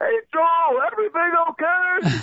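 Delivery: very high, stretched-out, drawn-out shouted call, acted out. Retelling how someone called out during a tour: imitating Danny yelling. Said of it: "Danny just yells back".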